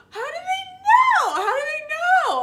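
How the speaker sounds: very high, loud panicked shriek.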